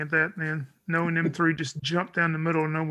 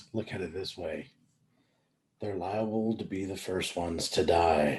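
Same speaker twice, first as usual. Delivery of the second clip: in-character whisper, lower and quieter; 10 semitones lower, 5 dB quieter than usual. Voicing a character whispering to another about the newcomers: whispering in character. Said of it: "he kinda whispers".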